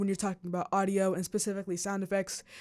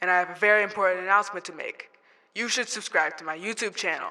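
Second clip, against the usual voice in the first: megaphone-filtered voice. Showing viewers different vocal effects, megaphone voice effect. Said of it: "like this megaphone".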